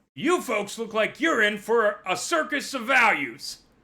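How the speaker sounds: loud, high-pitched robot voice. Voicing a robot driver who notices customers: robot merchant greeting customers. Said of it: "He looks over and notices you and goes".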